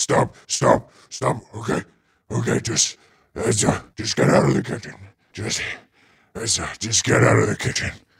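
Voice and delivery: begging monster voice. Voicing a bloodied ogre conceding and begging the party to leave: ogre begging to stop. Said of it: "he's like".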